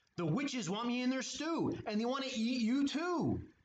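hurried, high-pitched screeching voice. Narrator voicing Skeleton calling to Ghost, screeched. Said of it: "he screeched".

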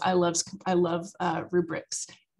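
ordinary delivery

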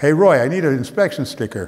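put-on loud hollering call. Retelling a father calling down into the pit to Roy: imitating hollering. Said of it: "hollers down in the pit".

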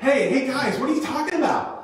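very high, grating, prying, nosy voice. Retelling Jesus interrupting a grieving conversation, put-on grating nosy voice. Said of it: "It's just really grating voice".

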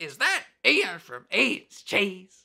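high, swooping, drawn-out. Retelling a run-in, imitating the man turning around: Chris Rock impression. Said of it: "That's my Chris Rock impression".

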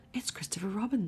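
keenly eager delivery. Pooh tells Piglet who just shouted his name, eager. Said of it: "said Pooh eagerly".

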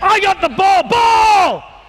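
high, loud yelling call.

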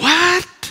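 fed-up, frustrated, exasperated outburst. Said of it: "can you sound a little bit frustrated".

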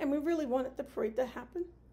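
choked-up words spoken through tears. Speaking for the community about the parade they wanted, crying. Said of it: "I don't even know why I'm crying".

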